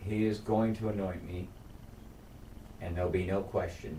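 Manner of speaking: ordinary delivery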